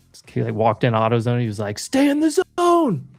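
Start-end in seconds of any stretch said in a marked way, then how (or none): 1.8-3.0 mock yelling, higher and louder. Retelling a video of someone walking into a store: imitating someone yelling a slogan. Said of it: "he just yells out their, like, slogan".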